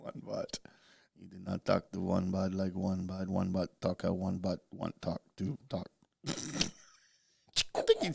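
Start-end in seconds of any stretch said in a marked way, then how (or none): 0.0-5.9 put-on flat monotone, much lower and quieter. Teasing another speaker, flat monotone voice.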